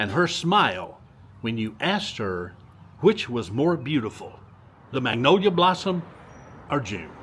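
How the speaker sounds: normal talking voice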